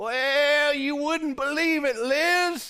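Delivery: put-on very high old-sounding voice with one word drawn out. Acting out Elizabeth asking Zach what the angel said: older Elizabeth voice. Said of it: "change the voice a little bit".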